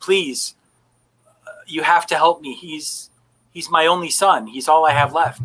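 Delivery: very soft, soft-spoken voice. As the game narrator, voicing a man who approaches a player's character, in a very soft voice. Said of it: "he says to you in a very soft voice".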